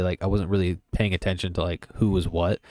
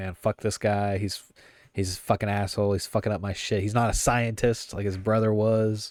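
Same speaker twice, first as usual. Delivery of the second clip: ordinary talk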